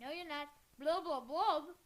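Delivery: loud, garbled mumble, words mushed around a toothbrush. Retelling a book argument where a character talks while brushing teeth: imitating talking while brushing teeth. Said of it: "'Cause he's brushing his teeth".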